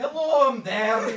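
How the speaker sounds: broad put-on Scottish accent. Showing the others how thick the Scottish Hephaestus voice was: Scottish accent. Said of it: "[name], demonstrate".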